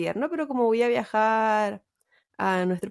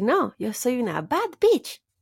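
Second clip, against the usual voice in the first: put-on girlish, enthusiastic, eager insistence. Retelling a video where a costumed girl answers her dad, imitating her enthusiasm. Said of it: "repetía con mucho entusiasmo".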